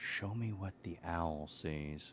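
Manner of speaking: hushed whisper. A player's character kneels and whispers into his holy symbol: whispered. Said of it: "and whispers into it".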